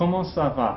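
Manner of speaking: "comment ça va" with tune dropping on "va". Showing how to greet a friend or peer: falling pitch on final va. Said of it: "with following intonation".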